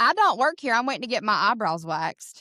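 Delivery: put-on broad, thick Southern American accent. Retelling a woman's reply while waiting for eyebrow waxing, in a very Southern American accent. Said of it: "in the most Southern American accent".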